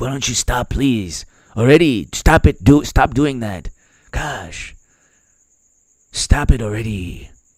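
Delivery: low-energy, rambling, out-of-steam delivery. Imitating the president pleading with rivals to stop: imitating Biden. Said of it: "he'll just be like".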